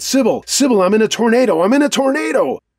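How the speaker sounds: play-acted shrill, very high screaming. Retelling calling a friend during a tornado: imitating screaming into the phone. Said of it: "just kept screaming into the phone".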